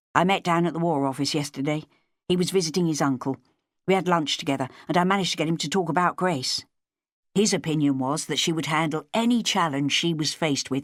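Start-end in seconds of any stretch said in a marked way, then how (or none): none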